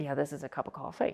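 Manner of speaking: play-acted calm, cool, casual, matter-of-fact. Retelling how a speaker stated big claims: imitating a calm, cool delivery. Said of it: "He was just saying it like".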